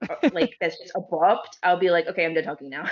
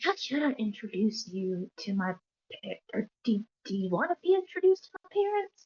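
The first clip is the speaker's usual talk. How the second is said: soft, hushed half-whisper in a put-on voice; 3 semitones higher, 7 dB quieter than usual. Voicing a character who asks how to introduce a friend: half-whispering in character. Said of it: "and then she kinda whispered".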